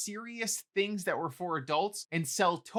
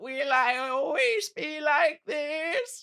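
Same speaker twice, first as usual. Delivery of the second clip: very slow, drawn-out, loud, pitched-up declaiming; 7 semitones higher, 5 dB louder than usual. Quoting a movie character who became a brain: Alistair voice. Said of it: "in his, like, war belief voice".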